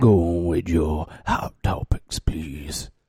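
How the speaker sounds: low, scratchy, whispered smoker voice like a DJ. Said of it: "I have to do it like Cookie Lee".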